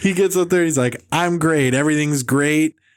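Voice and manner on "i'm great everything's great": mock hollow sarcasm with a comic, joke-telling rhythm. Imitating a comedian on stage: imitating sarcastic delivery. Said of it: "witless sarcasm".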